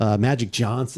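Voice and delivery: ordinary talk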